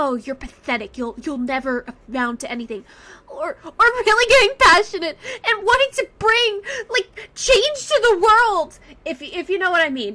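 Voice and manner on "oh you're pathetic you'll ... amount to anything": scummy, contemptuous, sneering put-on villain voice. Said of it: "someone being scummy and saying".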